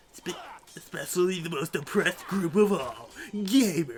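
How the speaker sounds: nerdy online gamer voice. Redoing an earlier line in that voice, gamer voice. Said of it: "doing that voice in particular".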